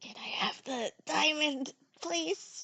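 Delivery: slow, soft, secretive whisper. Whispering in character to ask another character for the diamond: whispering in character. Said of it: "can I whisper to her and be like".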